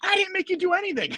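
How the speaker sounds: very high, mock childlike voice.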